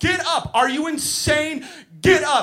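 mock very high, frantic, out-of-control yell. Retelling yelling at a child lying on the ice: imitating himself losing it. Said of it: "I completely lose my mind".

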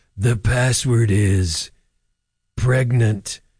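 very slow, drawn-out, creepy game-show announcer voice. Imitating the game show's voiceover announcer: imitating a creepy announcer voice. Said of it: "He sounds really creepy, the password guy".

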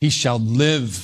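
"he shall live" stressed and slowed down. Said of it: "Emphasis on the word".

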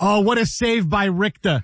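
put-on her New York accent coming through. Imitating a woman's accent as she calls a save, New York accent. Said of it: "her New York accent would always come through".

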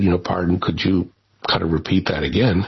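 normal talking voice

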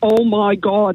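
put-on strong Derry accent. Retelling a cousin calling out on meeting in a pub bathroom, thick Derry accent. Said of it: "in a really thick Derry accent".

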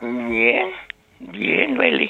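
soft, hoarse, half-whispered voice. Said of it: "¿Y esa voz tan sensual?".

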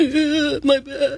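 groaning zombie voice, "my" drawn out. Radio host shows callers a zombie impersonation. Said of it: "Do your best zombie impersonation".

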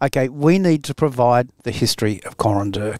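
ordinary talk, nothing marked

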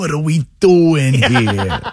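put-on over-the-top Italian accent, high, slow, drawn out. Recalling a comedy impression for the others: Maniscalco impression. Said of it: "what's the thing that Marcelo says in his impression?".

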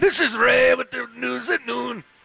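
fake, bad Jamaican accent, very high-pitched. A host tries to sound jamaican introducing the noon news; bad jamaican accent. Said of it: "I'm trying to sound Jamaican here".

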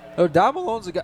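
voice breaking on a note mid-word. Commentator calling a football play, voice cracking. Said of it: "Oh, voice crack. Sorry".

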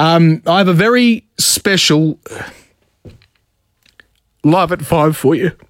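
slow, choked-up voice catching, on the verge of tears. Radio host introducing a tribute segment, on the verge of tears. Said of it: "I feel like I'm going to cry".

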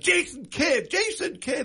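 high, screaming arena announcer voice. Giving an example of the New Jersey Nets announcer after a basket, imitating a PA announcer screaming. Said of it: "and you'll scream it out".

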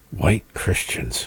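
playful, low, joking stage whisper. Speaker arguing about capitalism and socialism, mock whisper. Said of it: "I had to whisper that".

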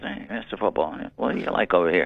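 put-on wiseguy mobster accent. Retelling how his friends greeted him at the track: imitating the guys at the track. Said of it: "they all talk like that".

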